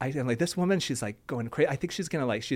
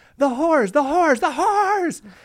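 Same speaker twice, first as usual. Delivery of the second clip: very high, frantic, repeated screeching; 12 semitones higher, 8 dB louder than usual. Retelling a woman running through the speaker's office, imitating someone screaming. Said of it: "literally screaming".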